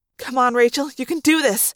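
ordinary delivery

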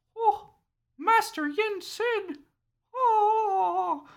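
very high, very slow dazed voice, "oh" drawn out. Retelling a game scene where Mickey is found unconscious: Mickey in an unconscious daze. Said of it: "in his unconscious fugue state".

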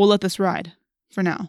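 plain

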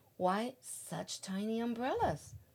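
plain

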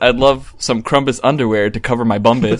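ordinary talk

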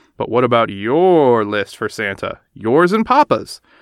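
ordinary talk

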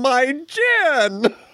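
put-on shouted outcry, the word gin drawn out. Retelling a funny movie scene where a character falls: imitating a character shouting. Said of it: "she shouts out".

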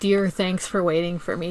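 plain

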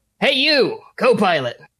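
loud, boisterous, high call-out. Narrating a game scene, an officer calls out to the co-pilot leaving his room; loud, boisterous Lieutenant Topper voice. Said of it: "You hear the loud, boisterous voice of Lieutenant Topper".

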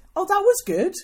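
high, loud, thrilled gushing. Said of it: "I just want people to go".

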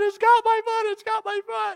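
tearful, panicked screaming while crying. Recounting calling out to their dad when something grabbed their foot, retelling screaming and crying. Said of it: "I'm just screaming and crying".

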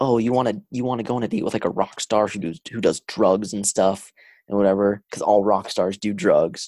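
ordinary talk

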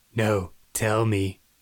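mock very creepy, sleazy coaxing tone. Retelling a cartoon scene where the doctor answers a client: imitating a creepy delivery. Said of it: "he very creepily goes".

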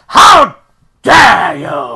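very loud, shrill, strict scolding shout. Retelling how an old teacher shouted at small children: imitating a teacher shouting. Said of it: "she used to really shout at them".

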